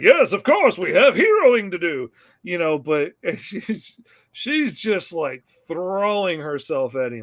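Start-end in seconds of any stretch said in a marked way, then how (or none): 0.0-2.1 loud, swooping, clueless heroic voice. Retelling a hero's reply to a woman throwing herself at him, imitating an oblivious hero. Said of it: "he's completely oblivious".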